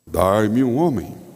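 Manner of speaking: deep, low, dropped-down giant voice. Retelling a pastor's telling of the Bible story, doing Goliath's voice. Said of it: "Ele até faz uma voz de Golias".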